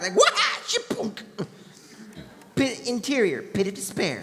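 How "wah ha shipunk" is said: hard-hitting battle cry. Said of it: "all hard like, like".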